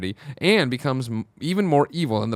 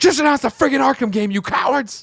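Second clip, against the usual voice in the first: acted, irate, angry voice pitched very high; 12 semitones higher, 4 dB louder than usual. While reading listener comments, the speaker breaks into a mock-angry Barrett voice. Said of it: "Angry Barrett voice".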